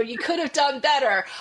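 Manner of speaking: very loud, high-pitched scolding yell. Retelling a mother yelling at a child: imitating mom yelling. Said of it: "my mom yelling at me".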